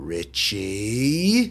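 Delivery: put-on scolding mother voice, swooping and sing-song. Retelling his mom catching him in trouble: imitating mom's in-trouble voice. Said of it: "and with that voice, she just goes".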